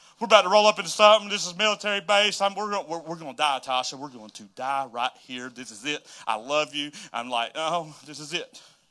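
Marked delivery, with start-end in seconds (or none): 0.2-6.9 mock full-on frantic, freaked-out, losing-it panic. Telling a story, the speaker acts out their panic to a companion: retelling freaking out. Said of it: "So I'm like freaking out".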